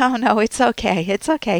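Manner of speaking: nervously laughing. Showing someone hiding being upset after coffee is spilled on them, nervously laughing. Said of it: "you're nervously laughing".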